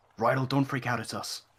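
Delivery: hushed whisper. Sneaking up invisible and calling to Rydell in character: whispering. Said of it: "whispering again".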